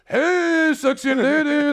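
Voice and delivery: high-energy, animated, hyped, very high-pitched delivery. Retelling how the guy he convinced approached the girls; imitating animated, high-energy delivery. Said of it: "actually being animated, high energy".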